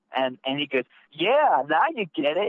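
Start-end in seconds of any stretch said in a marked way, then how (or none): 1.1-2.5 put-on condescending tone, higher. Retelling an argument, imitating the other person's reply in a mock-condescending tone. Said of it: "like in a condescending tone".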